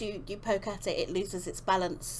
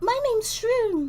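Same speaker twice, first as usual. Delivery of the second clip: tiny, very high, loud squeaky voice; 9 dB louder than usual. In a role-play, a tiny being introduces itself: tiny feminine Shroom voice. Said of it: "you hear a very tiny feminine voice".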